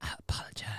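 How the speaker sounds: creepy, unsettling, whispery voice. Showing how people sound when they whisper like that: creepy whisper. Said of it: "isn't it creepy when people whisper like that".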